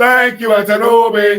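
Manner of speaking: put-on Nigerian accent. Leading everyone in a shared call-out: put-on nigerian accent. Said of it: "Put on your Nigerian accent".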